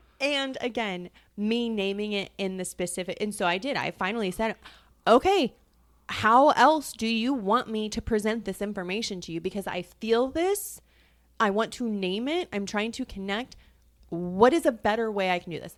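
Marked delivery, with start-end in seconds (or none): 5.1-15.8 put-on abrasive delivery, louder. Retelling what was finally said in a disagreement: imitating own abrasive tone. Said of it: "very, like, abrasive".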